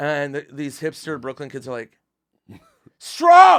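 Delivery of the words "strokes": very loud, high, indignant angry crowd yell. Retelling a crowd answering a comedian's question: imitating an angry crowd. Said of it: "Like, angry, not getting that I'm joking".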